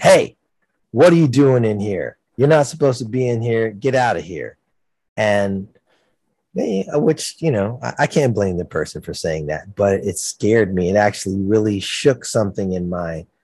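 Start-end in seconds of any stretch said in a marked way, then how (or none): 0.0-4.6 acted yelling in a loud, raised voice. Retelling someone catching the speaker near the drums on stage: imitating someone yelling. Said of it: "someone yelled out".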